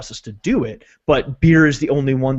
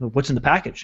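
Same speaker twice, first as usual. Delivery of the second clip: put-on accusing tone, quieter; 4 dB quieter than usual. Retelling a shipping clerk's question about the package: imitating an accusatory tone. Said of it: "Very accusatorily".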